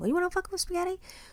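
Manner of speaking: mocking put-on voice, high and fast.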